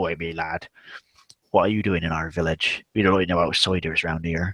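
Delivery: put-on elderly country farmer voice. Describing locals of tiny village towns, imitating an old village farmer voice. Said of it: "He'll talk like this".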